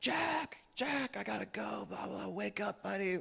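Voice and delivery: mock very high, raspy, rough yelling. Retelling trying to wake a roommate through a door: imitating own past yelling.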